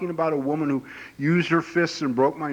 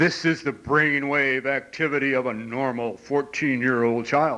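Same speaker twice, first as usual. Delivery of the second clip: authoritative, official-sounding tv announcer voice. Describing a TV brainwave demonstration, quoting its narrator: mimicking an authoritative TV voice. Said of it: "this authoritative voice says".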